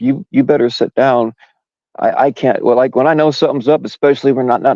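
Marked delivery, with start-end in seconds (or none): 0.0-2.6 mock tearful crying voice, higher. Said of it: "and she's crying".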